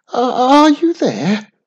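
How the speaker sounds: shrill, very high, very loud, halting stammering call. Reading a story, a character alone in a great chamber calls out, stuttering. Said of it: "She stuttered".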